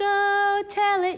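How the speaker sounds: high, loud, slow belted voice.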